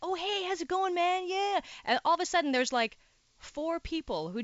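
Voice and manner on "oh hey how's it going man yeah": fake casual, friendly tone, pitched up. Retelling how line cutters greet friends ahead: imitating a feigned surprised greeting. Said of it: "they pretend they don't see you standing".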